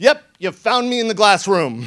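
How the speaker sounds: put-on, lightly sarcastic tone. Caught by a man who burst into the room, the speaker retells their reply: retelling a sarcastic reply. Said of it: "I'm slightly sarcastic".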